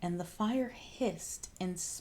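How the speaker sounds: ordinary delivery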